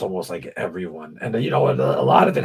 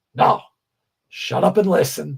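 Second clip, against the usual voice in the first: exasperated, fed-up, high, done-with-you tone; 7 semitones higher, 3 dB louder than usual. Retelling how a buddy explained the show: imitating Steve, fed up. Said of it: "That's exactly how he talks".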